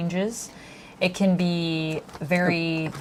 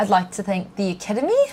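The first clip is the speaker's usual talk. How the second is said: put-on New Zealand accent; 2 semitones higher than usual. Speaker doing impressions with a friend, in an Anna Paquin New Zealand accent. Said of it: "who's from New Zealand originally".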